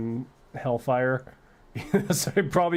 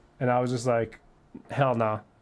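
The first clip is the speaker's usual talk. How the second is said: normal talking voice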